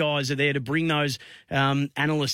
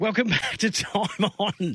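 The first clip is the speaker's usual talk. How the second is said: speaking through high, drawn-out laughter; 5 semitones higher than usual. Host returning from a break on air, laughing. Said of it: "I'm just laughing".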